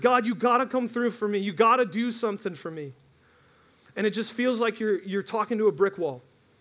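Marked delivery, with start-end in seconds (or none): 0.0-2.9 yelled line. Retelling crying out to God in great need: imitating own yelling. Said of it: "I'm literally yelling at him".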